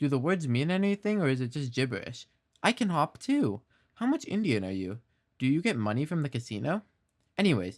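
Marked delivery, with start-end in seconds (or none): none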